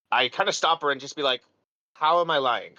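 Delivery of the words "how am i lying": sincere, genuine, earnest tone. Playing a character who stops a woman who just called him a liar, legitimately asking. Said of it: "Legitimately asking".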